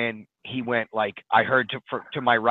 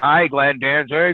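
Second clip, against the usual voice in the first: very loud, awkward blurt; 3 semitones higher, 7 dB louder than usual. Retelling greeting a band idol: imitating own loud awkward greeting. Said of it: "wicked loud and awkwardly".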